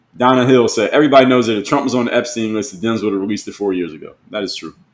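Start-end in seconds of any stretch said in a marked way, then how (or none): none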